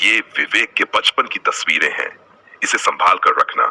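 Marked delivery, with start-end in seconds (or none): none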